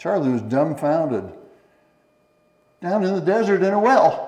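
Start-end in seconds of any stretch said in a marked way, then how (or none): 2.8-4.3 sudden, high, loud blurt. Charlie, dumbfounded, echoes the sheriff's answer about the body, blurted out. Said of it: "he blurted".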